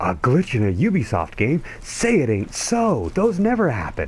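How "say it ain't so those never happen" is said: exceptionally sarcastic, very high, swooping. A game glitches mid-video, and the speaker reacts in an exceptionally sarcastic voice. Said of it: "that was my exceptionally sarcastic voice".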